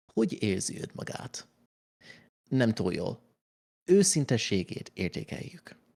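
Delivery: clumsy, bad fake British accent. Player, asked for an accent, reads game lines in Hungarian: bad British accent. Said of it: "I cannot do a British accent".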